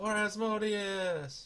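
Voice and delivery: high, charging battle yell, war cry. Voicing an attacker who steps through the door: yelling. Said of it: "also hear him yell out".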